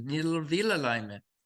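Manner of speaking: put-on quick, light, slight German accent. Retelling how Hans would call about his car, in Hans Wesky's German accent. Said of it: "with his little German accent".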